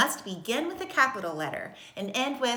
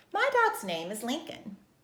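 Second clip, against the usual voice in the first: clear, expressive read-aloud telling tone; 2 semitones higher than usual. Reading an example sentence aloud for learners: reading with expression. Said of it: "Read it with me using expression".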